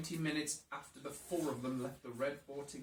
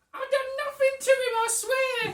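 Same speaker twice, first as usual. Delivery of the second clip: put-on Cockney woman's accent, very high, very loud; 10 dB louder than usual. Voicing an interviewed character after a body is found: Cockney lady accent. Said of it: "I get to do a brilliant Cockney lady accent".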